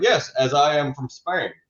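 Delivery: put-on slow, deliberate Scottish accent. Act out a movie character claiming to be a Spaniard, in Sean Connery's Scottish accent. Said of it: "his Sean Connery accent".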